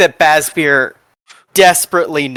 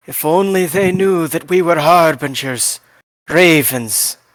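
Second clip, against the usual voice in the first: tutting aside remark; 2 semitones higher than usual. Voicing a character who tuts and speaks to a companion: muttering under his breath. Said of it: "tuts under his breath and looks over at Fash and says".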